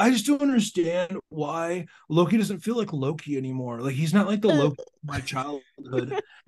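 put-on dude-bro voice, complaining tone. Speaker retelling their own reaction to a season two episode, mock internet fanboy bro voice. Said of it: "that's your bro voice".

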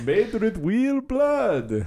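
high, spooky vampire voice. Joking about spooky Halloween commercials, Dracula voice. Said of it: "Having cool Halloween commercials with a Dracula voice?".

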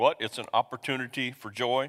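usual speaking voice

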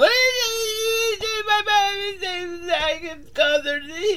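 put-on blubbery crying. Retelling how the ex-girlfriend greets Photo Boy at the airport, imitating blubbery crying. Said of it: "she's all blubbery tears".

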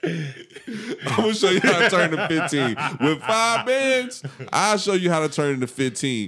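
high, loud mock guru hype voice with laughter.

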